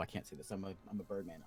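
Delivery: ordinary talk, nothing marked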